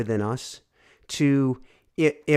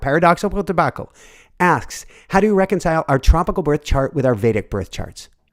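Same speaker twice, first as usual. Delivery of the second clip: very fast, rapid-fire, rushed delivery; 2 semitones higher, 4 dB louder than usual. Host reading out one last audience question before wrapping up: talking really fast. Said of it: "I'm going to talk really fast now".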